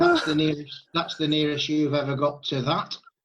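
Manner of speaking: plain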